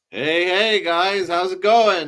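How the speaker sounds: big emcee announcer voice. A returning podcast guest greets the hosts, announcer voice. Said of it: "You got your announcer voice on".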